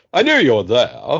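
put-on British-accented delivery. Retelling what a film character said: imitating a British accent. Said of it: "he just talk with a British accent".

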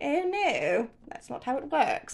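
put-on posh royal accent. After watching a Netflix monarch show, speaker slips into a Queen Elizabeth II impression. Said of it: "I then speak like the Queen".

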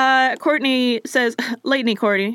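ordinary delivery

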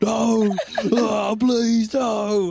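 very slow, drawn-out, high, loud terrified scream. Narrating a game scene, voicing the character Bash: Bash screaming. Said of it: "Bash just starts screaming".

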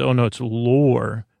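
ordinary delivery

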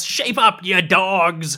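loud shouting with the word "dogs" drawn out. A game master voicing a fighter calling out to his crew mid-fight, shouting.

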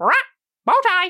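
very high-pitched parrot voice. Voicing Smoothie demanding a bow tie from Marshall: Smoothie the parrot voice. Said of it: "Smoothie also looks at you, Marshall, and goes".

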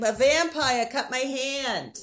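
put-on high, loud New England accent, drawn-out "hand". Quoting a kid from a film: Michael Brody's New England accent. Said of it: "that was Michael Brody, the kid. He's like".

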